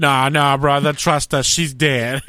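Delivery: loud, easy, dismissive, cocky voice.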